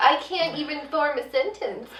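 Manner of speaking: meek mousy woman's voice. Describing a character who is mousy at work: imitating a meek mousy woman. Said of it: "meek little mousy".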